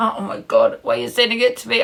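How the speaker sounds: nervous, awkward speech laughed through. Showing what a nervous laugh sounds like: demonstrating a nervous laugh. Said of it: "That's a nervous laugh".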